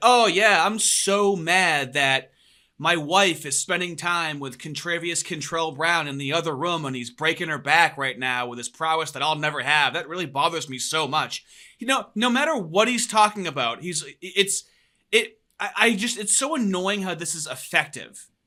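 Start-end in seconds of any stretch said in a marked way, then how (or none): none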